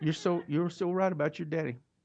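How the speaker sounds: put-on Oklahoma accent. Retelling what a senior lady from his dad's church told him: Oklahoma accent. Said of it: "I'll speak in Oklahoma for a minute".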